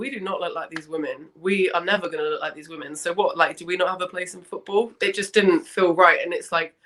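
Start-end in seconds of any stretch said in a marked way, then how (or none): none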